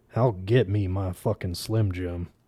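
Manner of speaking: low, hushed, intense, dead-serious voice. Narrator reading a character's answer after being told to shut up, in a low, intense voice. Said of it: "Lukey said in a low, intense voice".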